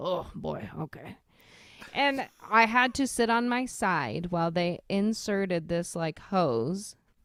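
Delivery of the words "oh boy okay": put-on whispery, breathy voice of an old smoker. Retelling what an old nurse said in the emergency room: imitating a nurse's smoker's voice. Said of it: "she's just got, like, a smoker's voice".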